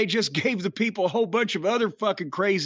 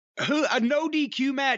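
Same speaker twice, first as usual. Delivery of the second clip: ordinary talk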